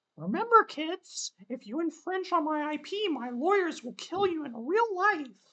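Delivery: very high, squeaky, loud put-on character voice. Doing a best impression of Maisie: Maisie impression. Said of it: "That's my best Maisie impression".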